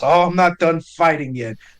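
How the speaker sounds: chuckling while speaking in character voice. Playing Kay in a fight, speaking the line: chuckling in character. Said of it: "Kay chuckles".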